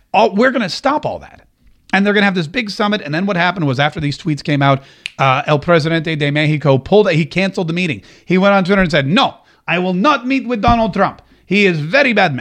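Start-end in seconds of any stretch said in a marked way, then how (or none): 9.0-12.4 clumsy, bad put-on Russian accent. Retelling a president's tweet canceling a meeting, in a bad Russian accent. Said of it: "That turned into a Russian accent".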